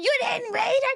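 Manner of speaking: piercing, very high, shrill screaming. Retelling how she screamed at the speaker about a pamphlet: imitating mother screaming. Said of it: "she's screaming at me".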